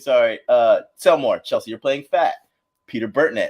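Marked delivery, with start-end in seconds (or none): none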